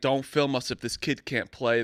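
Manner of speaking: ordinary talk, nothing marked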